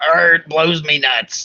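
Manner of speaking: hammy pirate voice. Repeating the other speaker's phrase to tease him, in a pirate voice. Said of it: "You sound like you're a some kind of pirate".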